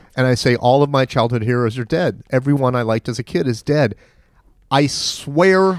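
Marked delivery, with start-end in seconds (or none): none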